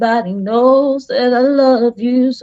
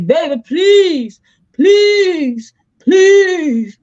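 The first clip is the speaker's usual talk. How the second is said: mock, very slow, abject pleading, high and drawn-out; 5 semitones higher than usual. Imitating people who apologized on their knees: imitating someone begging for forgiveness. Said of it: "apologizing back then and getting down on their knees".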